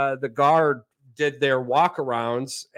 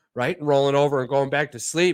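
ordinary talk

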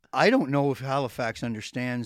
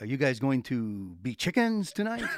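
fake French-accented voice. Retelling what a man asked a group of guys, french accent. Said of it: "he had that French accent".

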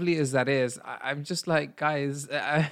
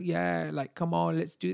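put-on London Cockney accent; 2 semitones higher, 4 dB quieter than usual. Quoting a guy from London who sent voice notes, Cockney accent impression. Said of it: "that's my impression of a Cockney accent".

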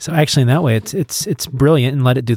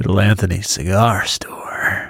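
attempted sultry, seductive tone; 3 semitones lower than usual. Repeating the phrase in the sultry version the hosts picked, sultry voice. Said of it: "that's your version of sultry".

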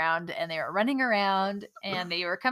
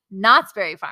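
heavy stress leaning hard on Knott's; 9 dB louder than usual. Recounting how Alan's family says the park name, stress on Knott's. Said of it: "They like emphasize the Knott's".

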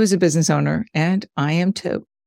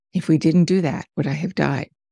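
put-on quiet whisper. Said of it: "just sort of whispering".

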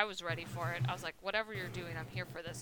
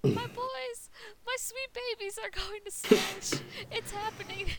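put-on excited yell, much higher, slower; 4 dB louder than usual. Streamer recalling their reaction to a Smash trailer, retelling an excited yell. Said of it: "And I kept yelling".

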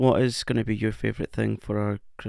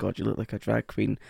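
ordinary talk, nothing marked

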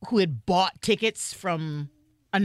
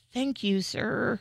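muttered whisper, much quieter; 2 semitones higher, 4 dB quieter than usual. Retelling what they said to a man nearby, whispered under breath. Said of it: "I kind of whispered under my breath".

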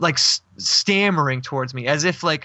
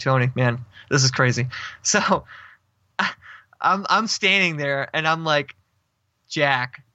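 normal talking voice

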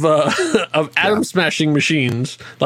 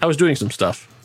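put-on deadpan delivery, faster pace. Recounting a scene, the speaker quotes Coulson's reply to Tony, retelling Coulson's deadpan. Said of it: "master of deadpan".

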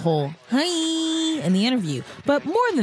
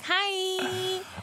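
soft, much higher, signature drawn-out hi. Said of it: "She'll be like".

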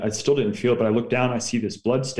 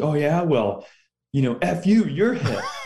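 acted angry, spaced-out, pitched-up tone; 6 semitones higher than usual. Retelling a wounded soldier's reply after being told he's hit: imitating someone angry. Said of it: "I don't know why he was so mad".

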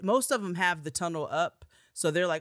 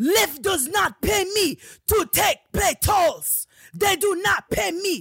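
put-on screaming, higher and louder; 14 semitones higher, 7 dB louder than usual. Retelling a ride where the driver refused the tunnel: imitating a driver screaming. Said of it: "just start screaming at me off rip".

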